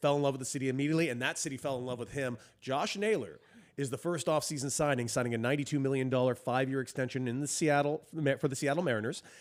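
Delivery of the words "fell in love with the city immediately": fast, rattled off with rising excitement. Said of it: "That's real".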